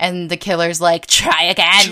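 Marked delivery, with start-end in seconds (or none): 1.1-1.9 put-on goblin character voice. Retelling a scene, the speaker voices the killer's reply; goblin voice. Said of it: "I don't know why I'm giving him a goblin voice".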